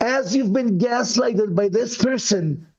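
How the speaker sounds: normal talking voice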